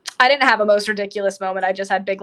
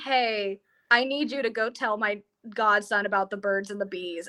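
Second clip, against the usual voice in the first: normal talking voice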